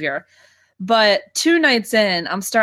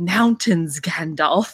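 put-on whisper, lower pitch; 4 semitones lower than usual. Retelling a partner whispering a line in bed: imitating a whisper.

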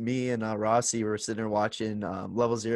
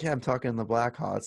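mock joking tone, faster. Retelling what another person said, mimicking him saying it jokingly. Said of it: "he jokingly says".

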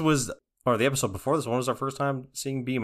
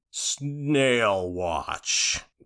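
slow drawl, word "snail" stretched out slowly. Repeating a phrase to show how it sounds: Kevin from The Office voice. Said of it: "The guy who talks like this".

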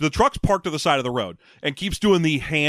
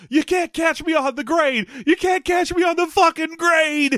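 gleeful cackle, very high-pitched; 13 semitones higher than usual. Retelling a driver escaping up a hill: imitating an excited cackle. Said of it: "He even excitedly cackles".

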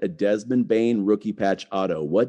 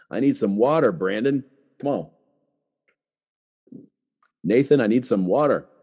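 speaking while hiccuping. Asking the others for water mid-talk, talking with the hiccups. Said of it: "I got the hiccups".

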